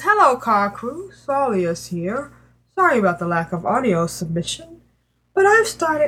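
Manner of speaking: failed, botched put-on British accent. Reading out a listener's email aloud: attempted british accent.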